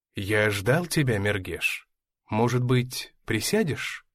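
ordinary delivery

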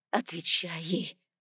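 hissed, whispered, sibilant delivery. Narrator reading Eva urging a companion to answer someone, hissed. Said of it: "прошипела Ева".

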